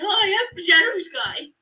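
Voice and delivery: really dopey, dumb character voice, high and slow. Describing a cat character in their game with Renna, doing Shadow Sky's really stupid voice. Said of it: "he talks like this".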